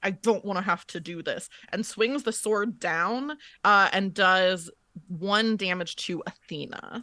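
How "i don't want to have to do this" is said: spoken through gritted, clenched teeth. Player voicing her character as she grabs the sword: through gritted teeth. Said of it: "she says through gritted teeth".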